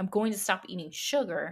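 ordinary talk, nothing marked

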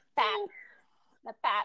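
pop said with Minnesotan accent. Saying the word pop with a Minnesotan pronunciation. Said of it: "So Minnesotan when I say that word".

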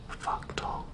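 very quiet, hushed, voiceless whisper. Sharing the thai word for pumpkin: whispered. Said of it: "I'll whisper it".

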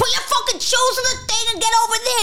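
shrill, very high, rude, barked-out shout. Retelling how airport staff here order travellers: imitating airport staff yelling. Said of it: "Why are you yelling?".

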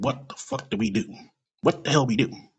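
normal talking voice

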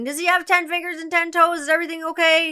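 put-on high yelling. Mother retelling her son's birth, yelling at the doctors, retelling a yell. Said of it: "I'm yelling at the doctors going".

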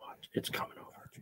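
hushed, very quiet whisper. Waiting for an image to come through: whispering. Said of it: "Why are we whispering?".

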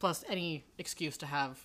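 plain

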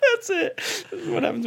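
high, laughing through the words, near sobbing.

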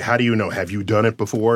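ordinary talk

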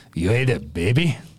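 slow, heavy orc chieftain voice. Voicing the orc chief, asking a player a question: orc chief voice. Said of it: "the orc chief looks at you and goes".

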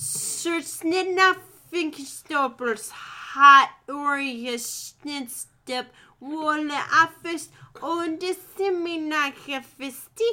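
high, loud gibberish with each word drawn out. Redoing the garbled phone message: like the little man in Twin Peaks. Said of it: "let me do that whole thing all over again".

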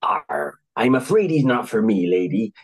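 stock sea-dog talk with "arr". Narrating a story, a tough-looking man answers the lady: Long John Silver seafaring voice. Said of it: "in a stereotypically seafaring voice".

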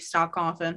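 ordinary delivery

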